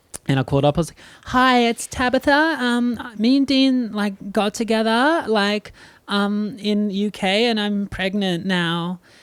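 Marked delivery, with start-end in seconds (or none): 1.3-9.0 put-on high girlish voice, very slow and drawn out. Retelling a message left on a family's answering machine, in a put-on girl's voice. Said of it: "did this uh, girl's voice".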